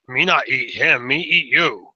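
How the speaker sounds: giant monster voice. Voicing a ten-foot creature threatening a player: voicing a giant creature. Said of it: "They, they look at each other".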